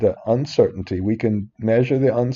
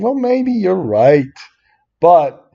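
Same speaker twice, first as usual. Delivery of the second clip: full-on loud shouting, pitched up; 7 semitones higher, 5 dB louder than usual. A speaker explaining a formula step by step, shouting. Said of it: "I'm shouting, sorry".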